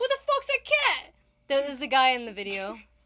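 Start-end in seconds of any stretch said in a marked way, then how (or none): 0.0-1.1 put-on Brooklyn accent, man's voice. Imitating the man in a cat video he sent: brooklyn guy voice. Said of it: "What impression are you doing?".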